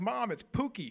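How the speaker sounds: very high-pitched, excited voice. Retelling a phone commercial, the speaker acts out a player excitedly calling his mom. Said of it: "He's all excited".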